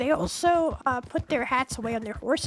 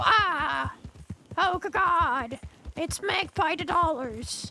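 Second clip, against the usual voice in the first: very slow, stammering cry of fear; 4 semitones higher than usual. Acting out deputies who spot the speaker: imitating scared deputies. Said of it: "they're gonna go".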